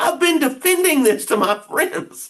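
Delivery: put-on, very high, furious, angry outburst. Retelling what a girl said in a family argument, imitating someone mad. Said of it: "she was so mad".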